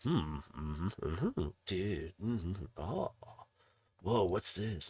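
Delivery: soft, slow, absent mumbling murmur. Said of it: "you just hear him whispering".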